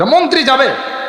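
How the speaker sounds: gatekeeper-style calling out.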